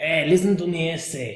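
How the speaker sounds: generic put-on Mexican accent. Showing a generic impression in an accent video: generic mexican accent impression. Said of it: "generic impression of the Mexican".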